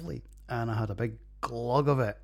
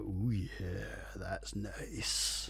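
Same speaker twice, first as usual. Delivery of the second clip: put-on hushed, lecherous dirty old man voice; 3 semitones lower, 7 dB quieter than usual. Reviewing a double ipa, the speaker voices his reaction to it: dirty old man voice. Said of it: "And a dirty old man voice".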